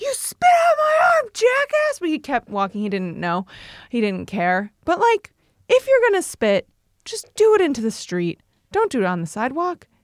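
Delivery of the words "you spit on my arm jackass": mock very high, drawn-out shrieking scream. Retelling turning around on a man who spat on their arm, retelling a scream. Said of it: "I turned around and I screamed".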